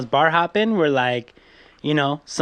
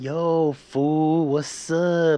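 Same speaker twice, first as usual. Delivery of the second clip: slow, dragged-out mock LA drawl. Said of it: "they would be like".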